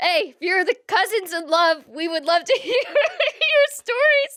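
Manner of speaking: talking while laughing through the words. Inviting listeners to share their crazy stories, laughing while talking. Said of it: "Sorry, I'm laughing".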